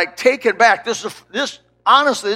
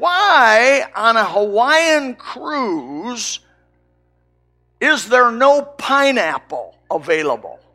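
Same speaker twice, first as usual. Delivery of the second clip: put-on cranky, grouchy little old lady, why drawn out. Retelling a little old lady's question to the cruise chef, imitating a grouchy voice. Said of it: "in a grouchy-sounding voice".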